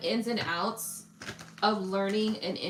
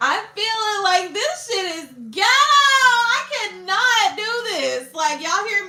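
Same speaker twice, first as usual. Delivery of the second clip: put-on very high, loud, swooping valley-girl voice; 11 semitones higher, 12 dB louder than usual. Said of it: "I sound like a valley girl".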